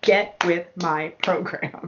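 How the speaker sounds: slowly stretched-out words.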